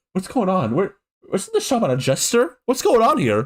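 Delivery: high, baffled, totally lost, confused voice. Imagining parents in the audience reacting to the show: imitating confused parents. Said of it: "I think the parents will be like".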